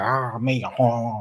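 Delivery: sound of a zombie. Acting out a zombie that soya zombies would catch: zombie impression. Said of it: "That was my impression of a zombie".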